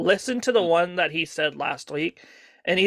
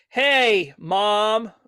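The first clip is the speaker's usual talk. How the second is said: mock scripted-sounding read, pitched higher; 4 semitones higher than usual. Describing how he sounded going into it, the speaker imitates a mock scripted delivery. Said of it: "like very very scripted".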